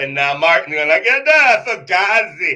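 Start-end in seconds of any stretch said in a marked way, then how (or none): 1.3-2.6 put-on New York accent, loud and drawn-out. Discussing the Texans' season, acting out Martin's reaction, Martin in New York accent. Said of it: "Sorry about the New York accent".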